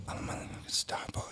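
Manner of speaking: very quiet, barely audible whisper. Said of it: "so quiet".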